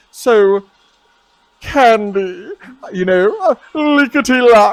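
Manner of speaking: very slow, loud, booming voice placed at back of throat. Demonstrating where a voice sits, talking from back of throat. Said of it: "so if I talk from that krr".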